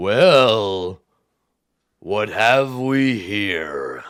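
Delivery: bone-shaking, loud, drawn-out rumbling giant voice. Storyteller voicing a giant creature looking down at the players: rumbling giant voice. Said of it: "horrible rumbling language that you can feel in your bones".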